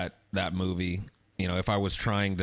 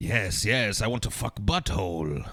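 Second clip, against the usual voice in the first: put-on slow, unhurried British accent. Quoting a talking Sasquatch character: imitating a British accent. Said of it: "he had like a British accent".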